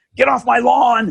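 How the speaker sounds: shrill, high, loud put-on old-man scream. Retelling his resistance at the bank, playing an old man with a cane, mock-screaming. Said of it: "I'm screaming".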